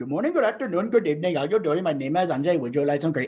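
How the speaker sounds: put-on Indian accent, thrown on. Showing how easy it is to throw on an accent: indian accent. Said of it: "I just did an Indian accent".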